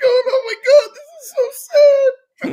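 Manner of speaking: mock very high, very loud, drawn-out blubbering sob. Retelling watching sad movies with a box of tissues: imitating own teary voice. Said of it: "sitting there with a box of tissues going".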